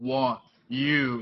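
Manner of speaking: deep, low baritone talking-machine voice. Speaker recalling a talking pinball machine to another speaker, Gorgar deep baritone voice. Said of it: "with that deep baritone voice of Gorgar".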